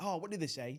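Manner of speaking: usual speaking voice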